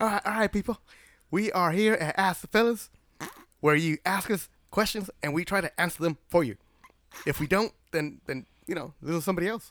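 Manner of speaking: fake Southern accent, show-host style. Opening the show and welcoming the people: put-on southern voice. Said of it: "was that my southern voice?".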